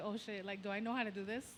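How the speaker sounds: ordinary delivery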